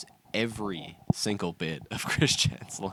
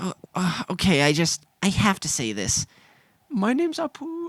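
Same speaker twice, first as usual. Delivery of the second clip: very high-pitched voice, swooping in pitch, words drawn out; 11 semitones higher, 7 dB louder than usual. Retelling a clip of people taking Chris Chan to a restaurant: imitating Chris Chan. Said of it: "Chris Chan goes".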